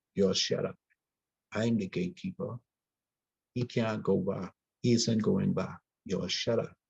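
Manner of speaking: usual speaking voice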